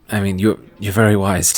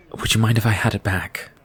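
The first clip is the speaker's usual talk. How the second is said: plain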